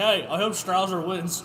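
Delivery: ordinary delivery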